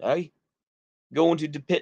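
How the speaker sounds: slight northern English accent. Trying out different accents, the speaker does a northern English accent. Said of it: "kind of an accent like that".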